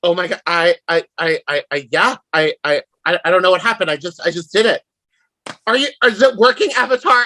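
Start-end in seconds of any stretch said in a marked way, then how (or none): 0.0-4.8 panicked, freaked out, stammering, tripping over words. Playing a character holding the rescued Code after a fight: acting panicked, stammering.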